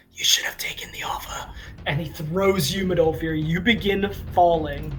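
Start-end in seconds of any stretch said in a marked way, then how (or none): 0.1-1.4 whispered, quieter and faster. The game master's character whispers to Finry before throwing a companion. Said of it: "he whispers to Finry and goes".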